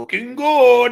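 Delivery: put-on Puerto Rican Spanish accent. Quoting what his grandfather used to say, in a Puerto Rican accent.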